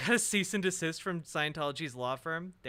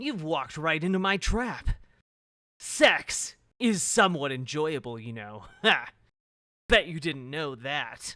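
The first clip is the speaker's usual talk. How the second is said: smug anime rival voice, louder; 5 dB louder than usual. Answering a chat message in a put-on voice: anime rival voice. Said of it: "It's my anime rival voice".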